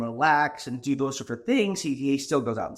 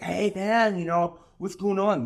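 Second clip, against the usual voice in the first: put-on drunk man voice, higher pitched; 5 semitones higher than usual. Retelling a run-in with drunk strangers: imitating a drunk man. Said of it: "Really drunk".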